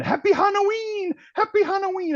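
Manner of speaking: play-acted, very high, shrieking scream. Retelling a great Halloween game catch: imitating own past screaming. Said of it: "And I was screaming".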